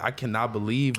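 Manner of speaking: ordinary delivery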